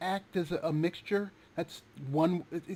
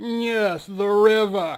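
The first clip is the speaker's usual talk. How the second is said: comic, quick, punchline-style joking delivery; 9 dB louder than usual. Retelling a TV sketch's punchline from off camera: Benny Hill voice. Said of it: "you hear Benny Hill's voice from off camera go".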